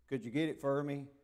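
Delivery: Highlander Appalachian mountain accent. Showing the audience the Highlander Appalachian accent they have. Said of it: "we have the Highlander Appalachian accent".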